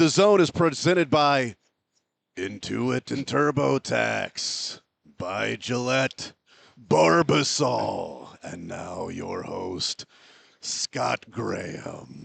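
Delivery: rough, creaky radio-announcer voice. Repeating an introduction of the host because it is too much fun, do a good David Lee impression. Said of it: "That is a good David Lee".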